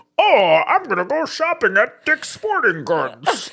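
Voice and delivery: very high, slow, put-on jerk-guy dude voice. Acting out the chin-tuck impression of a guy: chin-tucked mock guy voice. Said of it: "they take their chin and they tuck it in and go".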